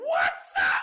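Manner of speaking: flustered, freaked-out tone. Retelling greeting an admired quarterback in the hallway: retelling own high-pitched voice. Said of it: "My voice got that high".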